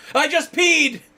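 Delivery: very high, far too loud blurt. Acting out someone jolting awake on a plane: pretend way too loud voice. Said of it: "saying in way too loud of a voice".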